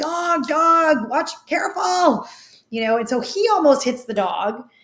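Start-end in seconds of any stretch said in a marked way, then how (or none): 0.0-2.3 very slow, high, very drawn-out acted-out screams. Recounting warning a passing truck about a dog, retelling a scream. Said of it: "I'm screaming like".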